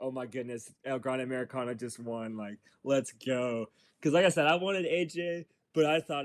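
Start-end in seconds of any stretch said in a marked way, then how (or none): none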